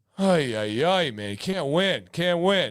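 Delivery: slow, sarcastic, put-on woeful lament. Joking that helping only gets pitchforks: sarcastic mock complaining. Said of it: "pure sarcasm".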